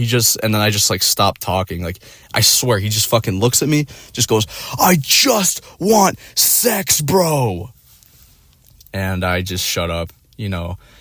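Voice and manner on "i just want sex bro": mock, very slow, high, stretched ogre screech. Retelling what a guy screamed at him, retelling an ogre yell. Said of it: "screams like with this ogre yell".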